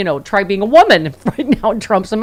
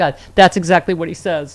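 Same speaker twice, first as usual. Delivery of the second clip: ordinary talk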